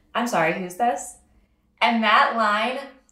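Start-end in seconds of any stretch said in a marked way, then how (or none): 0.2-1.2 mock sarcastic teen voice with feigned ignorance. Recalling their first line to a man at fifteen, retelling a sarcastic reply. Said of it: "the sarcastic 15-year-old me responds".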